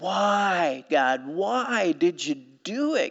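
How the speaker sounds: mock very slow, anguished, despairing cry with drawn-out "why". Quoting his cry to God: acting out despairing cry. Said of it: "Can you hear the despair in his voice?".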